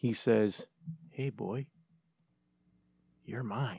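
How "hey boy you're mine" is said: barely-there, hushed, very soft half-whisper. Retelling what Santa Claus said to him as a child: retelling a half-whisper. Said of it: "he whispers to me".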